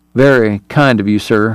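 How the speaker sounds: ordinary delivery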